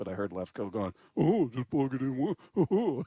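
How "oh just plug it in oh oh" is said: slow, dragged-out, dopey dumb-guy voice. Retelling someone mimicking the speaker: imitating [name]'s dumb guy voice. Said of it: "He's just mimicking my voice".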